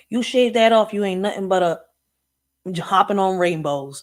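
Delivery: put-on furious, angry old man voice. Retelling what a grandpa said to men shaving: imitating an angry grandpa. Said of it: "he would get so pissed off".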